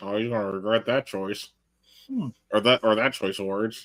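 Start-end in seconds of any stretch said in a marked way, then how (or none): 0.0-1.5 muttered under the breath, much quieter. Imagining a reaction after hearing the professor speak, mumbled under the breath. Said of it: "I'm going to mumble under my breath going like".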